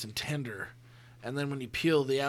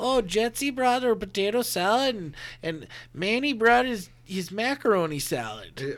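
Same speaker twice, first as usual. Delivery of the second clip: put-on Midwest accent, higher, louder; 8 semitones higher, 6 dB louder than usual. Speaker picturing a backyard cookout scene, in a Midwest accent. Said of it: "All of a sudden, he gets a Midwest accent".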